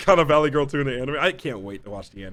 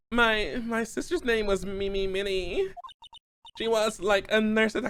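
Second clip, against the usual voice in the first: put-on high, drawn-out Valley Girl voice; 6 semitones higher than usual. Reading a witness's game dialogue about her sister aloud: Valley Girl voice. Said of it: "keep doing the Valley Girl voice for her".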